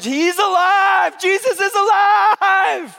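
put-on high, loud, slow, excited child's yell.

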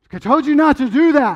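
high, loud, angry scolding voice losing composure. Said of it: "we get upset and you get angry".

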